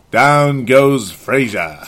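put-on announcer voice, classic call style. Reading a requested line aloud: Howard Cosell voice. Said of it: "doing your best Howard Cosell voice".

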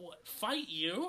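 high, stunned, shocked, thrilled, excited outburst. Reading a story aloud, voicing Alex reacting to a request: shocked and excited. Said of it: "Alex exclaims in shock and excitement".

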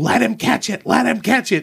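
put-on yelling. Retelling a childhood ballgame memory, the speaker acts out dad's yell: retelling dad's yell. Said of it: "I just remember my dad yelling".

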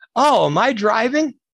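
play-acted sweet, butter-wouldn't-melt innocence, very high. Retelling what a woman said after hitting him: imitating a sweetly innocent tone. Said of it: "looks at me real innocent and says".

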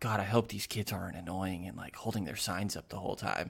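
put-on whispering voice. Retelling what a lady behind them said to her friend: imitating someone whispering. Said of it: "the lady behind us whispering to her friend".

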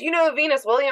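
mock slurred drunk speech. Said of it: "slurring his words".

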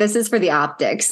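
ordinary talk, nothing marked

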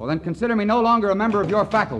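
very high, loud shout. Peter, in a heated argument with the head of his faculty, shouting. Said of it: "What are you two shouting for?".

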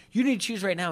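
high-pitched scream. Retelling a housemate's demand, imitating Josh screaming. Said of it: "Josh is screaming at her".

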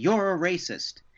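high, eager, yelled call-out, heckling style. Retelling how a heckler at a comedy show yelled: imitating a heckler yelling.

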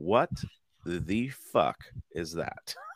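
very slow, drawn-out exclamation. Retelling a young daughter's reaction at a new park: imitating daughter's exact delivery. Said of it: "Just the way she said exactly like that".

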